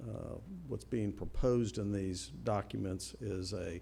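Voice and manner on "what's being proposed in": plain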